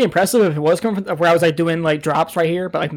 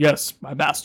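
metallic villain voice, slower, quieter; 3 semitones lower, 4 dB quieter than usual. Comparing it to Darth Vader answering the Emperor, metallic Darth Vader voice. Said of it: "It had a metallic sound to it".

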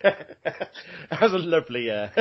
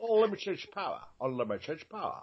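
bad put-on Scottish movie-star voice, quieter; 2 semitones higher, 8 dB quieter than usual. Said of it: "That was my Sean Connery".

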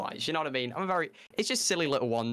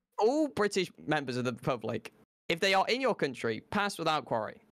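normal talking voice

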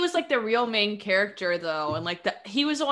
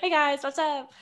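put-on friendly nice-guy voice, higher; 6 semitones higher than usual. Joining the joke about a cloned villain who comes out nice: nice-guy clone Palpatine voice. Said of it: "as a nice guy".

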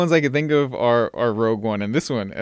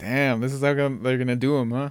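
plain

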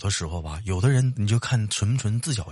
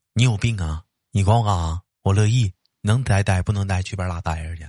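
ordinary talk

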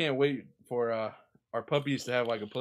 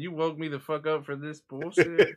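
put-on cranky, indignant, angry puppy voice; 4 semitones higher, 4 dB louder than usual. Voicing an angry puppy just woken up: voicing an angry puppy. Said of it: "She's so mad right now".

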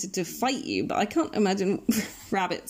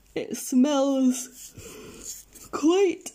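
speaking mid-yawn, pitch rising; 6 semitones higher than usual. Trailing off mid-sentence, yawning while speaking. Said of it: "Sorry, I'm yawning there".

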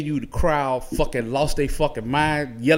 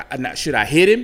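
ordinary talk

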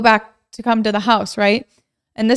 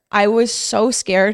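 ordinary talk, nothing marked

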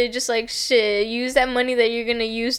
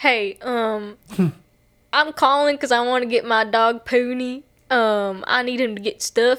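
fake, put-on Southern accent. Retelling a TikTok of a woman prank calling a taxidermist, put-on Southern accent. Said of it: "She was like talking in like a Southern accent".

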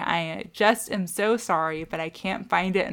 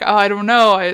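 mock stammering, much louder; 11 dB louder than usual. Retelling how a man answered Genevieve, lost for words; imitating a stammer.

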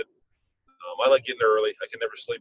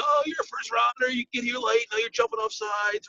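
high-pitched, slow, mock yelling coach voice. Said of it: "And he's yelling".

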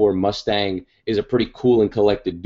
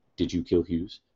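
put-on dead-serious, grim delivery; 3 semitones lower, 8 dB quieter than usual. Retelling an interrogation scene, quoting the interrogator in a grim tone. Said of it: "he takes on a very grim tone".

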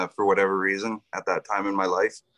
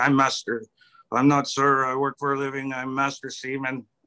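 thick put-on French accent, pitched up; 5 semitones higher than usual. Quoting the man giving fire-picket instructions, the speaker uses a heavy French accent. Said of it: "in a heavy French accent".

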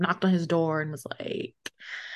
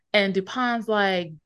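ordinary delivery

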